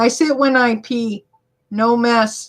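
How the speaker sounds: usual speaking voice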